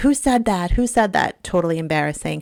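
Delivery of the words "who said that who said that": put-on, high-pitched, mild half-shouted yell. Retelling what the other team's coaches did on the field: imitating coaches screaming. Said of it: "were screaming".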